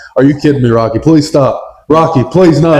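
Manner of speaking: plain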